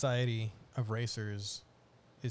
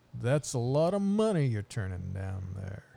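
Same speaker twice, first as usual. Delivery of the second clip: slick, smooth-talking delivery in a raised voice; 6 dB louder than usual. Retelling what the alien says in the show: imitating a smooth-talking character. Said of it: "he talks like a smooth talking dude".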